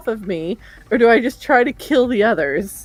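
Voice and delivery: plain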